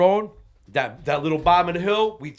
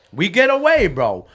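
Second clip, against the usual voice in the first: plain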